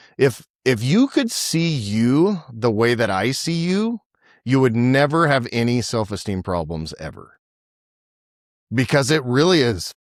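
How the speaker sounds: choked-up voice catching with emotion. A man repeats to dads the phrase he tells his wife, a little choked up. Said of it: "I get a little choked up".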